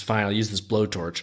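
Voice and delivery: ordinary talk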